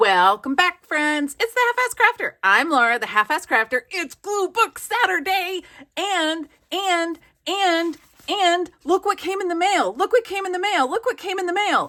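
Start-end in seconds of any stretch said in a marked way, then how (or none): 1.4-11.9 giddy, pitched-up, bubbling-over excitement. Showing viewers what came in the mail: overexcited. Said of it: "let me calm down".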